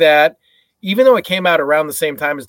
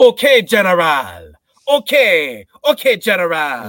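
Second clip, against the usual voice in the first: fake Jamaican accent, spoken much slower; 2 semitones higher than usual. Mocking a movie actor playing DJ, in DJ's terrible Jamaican accent. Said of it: "His Jamaican accent is so incredibly terrible".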